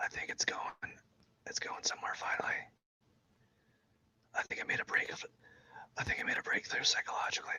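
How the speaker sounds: hushed whisper. Talking to listeners while trying not to wake someone up, whispering. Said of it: "I'm whispering. I have to whisper".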